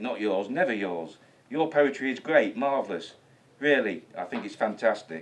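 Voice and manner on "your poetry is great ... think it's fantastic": ordinary talk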